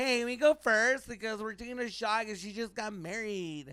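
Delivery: put-on, very high, pushy, slow, drawn-out bossy voice. Retelling girls walking into a bar: imitating a bossy girl. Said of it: "walks in all, like, you know, bossy".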